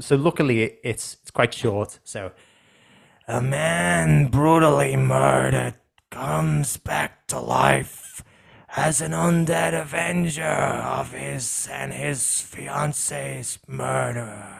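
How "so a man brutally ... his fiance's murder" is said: raspy, gravelly voice in a slow, drawn-out drawl. Asked to do his Wincott for a film synopsis: gravelly Michael Wincott impression. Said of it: "That was full gravel".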